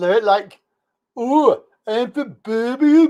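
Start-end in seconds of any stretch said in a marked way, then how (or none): 1.2-3.1 bad Birmingham accent, much higher. Showing how people there talk, the speaker tries a bad birmingham accent. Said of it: "that ain't no Birmingham accent".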